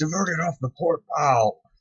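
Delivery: high-pitched, panicked screaming yell.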